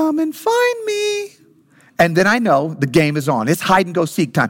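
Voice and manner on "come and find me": tiny, very high, muffled, drawn-out voice. Retelling a hidden child calling out during hide and seek: imitating a little muffled voice. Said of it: "suddenly I'll hear a little muffled voice".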